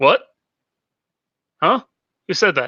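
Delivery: very loud, high, alarmed, startled blurt. Acting a startled character looking around for a voice: startled in character. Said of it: "like, looking around".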